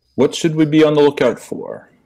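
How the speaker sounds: put-on high, insufferable New England accent. Tabletop player questions a prison guard in character, insufferable New England accent.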